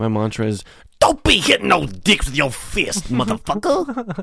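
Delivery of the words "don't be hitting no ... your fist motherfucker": put-on high, sing-song skinny monster voice. Restating another speaker's rehab mantra the way it must be said: skinny monster voice. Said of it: "you have to say it like the skinny monster".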